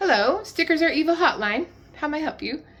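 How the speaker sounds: put-on British accent. Answering a pretend hotline call as a joke: put-on British accent. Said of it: "Why did I just go to a British accent?".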